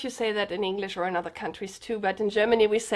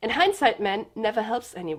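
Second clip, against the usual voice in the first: ordinary talk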